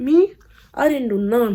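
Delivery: shocked, stunned tone.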